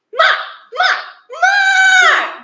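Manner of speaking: very high, squeaky puppy yapping bark. Complaining about a puppy the speaker minded that barked all night; tiny squeaky dog bark. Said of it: "barking his tiny squeaky voice".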